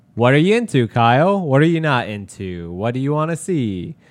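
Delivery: plain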